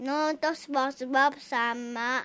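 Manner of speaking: normal talking voice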